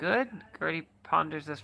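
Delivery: ordinary delivery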